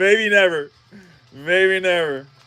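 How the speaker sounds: slow, let-down, dejected and disappointed. Opening cards with another speaker, answering in a disappointed voice.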